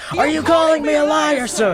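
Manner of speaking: over-the-top, very high, shrill, overblown yell. Acting out a planned overreaction bit: imitating a yell. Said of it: "I yelled".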